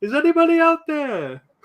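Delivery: over-the-top, exaggerated Welsh accent, pitched very high. Imitating a man calling out in Titanic, in the most exaggerated Welsh accent. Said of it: "Like the most exaggerated Welsh accent ever".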